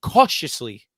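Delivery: strong stress punching the word "cautiously". Giving a view on a playoff matchup, stress on CAUTIOUSLY. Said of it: "I emphasize that word so much".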